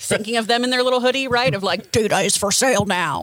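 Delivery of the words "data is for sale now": disguised, distorted, scrambled, garbled voice. Speaker imagining a hacker's data-sale demand, in a distorted hacker voice. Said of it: "I can only hear it in the distorted voice".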